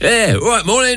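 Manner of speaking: put-on chummy lorry driver voice, pitched very high. Greeting people from a car window, the speaker does their lorry driver's voice. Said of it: "I do all that".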